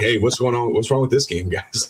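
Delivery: upbeat, cheerful, unbothered and carefree. Retelling own remark while smiling through a losing game: imitating own cheerful self. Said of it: "And I'm sitting there just smiling".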